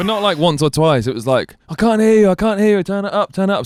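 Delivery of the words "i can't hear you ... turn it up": pushy, repetitive, high, insistent heckling yell. Retelling how a guy in the front row kept yelling: imitating someone screaming. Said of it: "screaming at me".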